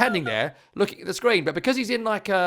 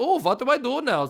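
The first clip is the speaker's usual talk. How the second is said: put-on European accent, put on and higher; 6 semitones higher than usual. Retelling a manager's confusion at a cable problem: Daniel Farke impression. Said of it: "This is my best accent".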